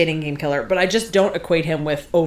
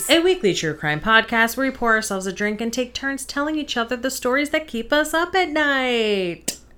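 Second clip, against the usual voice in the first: rushed in a single breath, pitched up; 8 semitones higher than usual. Podcast host delivering the show's intro: all in one breath. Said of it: "I was trying to do that all in one breath".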